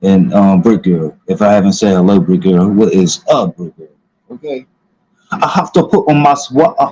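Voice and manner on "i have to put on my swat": cheesy, corny, put-on London accent. After greeting people by name, the line in a corny london accent. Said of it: "That was my um my corny ass um London accent".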